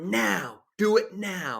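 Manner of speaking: high, slow, drawn-out yell. Retelling a movie scene where the character demands a pistol: imitating Ed Masterson yelling.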